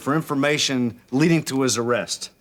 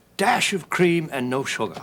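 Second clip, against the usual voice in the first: put-on British accent, his best attempt. Asked how he takes his tea, answering in a put-on british accent. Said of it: "If I put on my best British accent".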